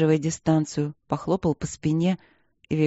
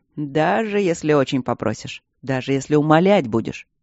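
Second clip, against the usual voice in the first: plain reading voice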